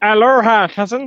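very high, loud cartoon alien voice. Sending a shout-out to a New York contact, in a Stitch impression. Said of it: "that's my Stitch impression".

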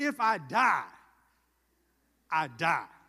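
mock gangster-tough voice, very loud and very slow. Acting out Esther's vow to go before the king: Esther acting gangster. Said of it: "she gets real gangster with it".

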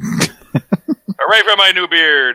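high, booming voice with words drawn out slowly. Joking about a celebrity wedding in a Tom Cruise impression. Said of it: "That was my impression of Tom Cruise".

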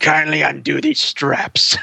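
put-on possessed demon voice. Describing how a woman sounds, doing a possessed Linda Blair voice. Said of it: "Norma sounds just like possessed Linda Blair".

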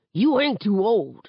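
growled in a threatening tone. Narrator voices a father turning on Seven while driving, growling. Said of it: "and growls".

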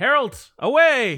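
shouting. A player voicing their character, calling out to harold; yelling. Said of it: "I actually yell that".

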